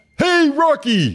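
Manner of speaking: very high-pitched character voice, pitched way up. Acting out the skit when the other speaker plays Rocky: Bullwinkle voice. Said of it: "so you're gonna be Rocky?".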